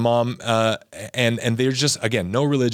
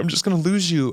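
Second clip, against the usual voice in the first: put-on, high, weepy, tearful crying plea; 7 semitones higher than usual. Retelling how mom reacted to the news, imitating mom crying. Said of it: "she's still crying".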